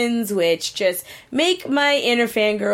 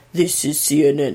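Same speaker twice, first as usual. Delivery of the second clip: as deep as the voice goes; 6 semitones lower than usual. Showing how low the voice goes, lowest possible voice. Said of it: "That's about as low as my voice goes".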